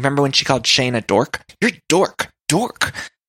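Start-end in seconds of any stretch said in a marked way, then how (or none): 1.6-2.9 aggressive, pitched-up yell. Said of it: "It's sort of like that".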